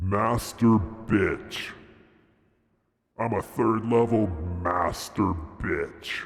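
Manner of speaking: deep, low-pitched voice. Answering a request to say the line in a deep voice. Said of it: "Can you use your deep voice and say".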